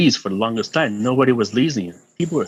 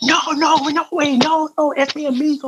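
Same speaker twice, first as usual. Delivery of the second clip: put-on scream in Spanish, higher pitch. Retelling a friend pleading with a gunman: imitating a friend screaming in spanish. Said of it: "screaming in Spanish".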